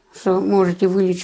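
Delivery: normal talking voice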